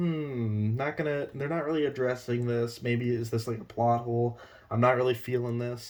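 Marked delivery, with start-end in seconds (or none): none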